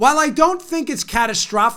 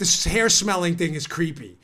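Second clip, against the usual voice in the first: ordinary talk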